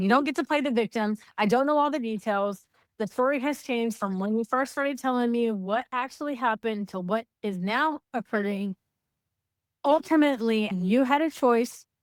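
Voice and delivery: plain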